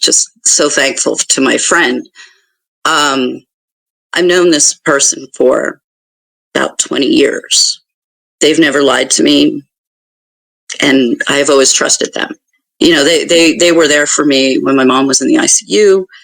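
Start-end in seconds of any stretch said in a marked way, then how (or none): 0.0-12.3 emotional, choked-up voice catching. Speaking of a friend known for twenty years: choked up. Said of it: "I'm getting a little choked up talking about it".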